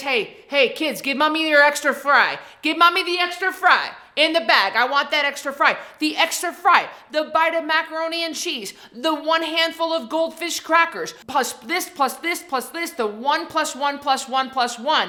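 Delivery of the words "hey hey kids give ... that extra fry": put-on mom voice, coaxing tone. Acting out a mom asking kids for their extra fry: acting out a mom asking kids for fries. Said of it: "maybe like this".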